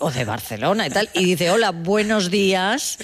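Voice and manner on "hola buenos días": slow, drawn-out "hello" with rising pitch. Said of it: "es que vas a pedir algo".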